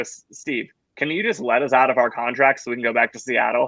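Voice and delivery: ordinary talk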